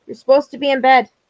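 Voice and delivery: abrupt, quick, loud shout. Breaking off a talk to tell someone they should be in bed, yelling. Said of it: "I'm yelling at Max".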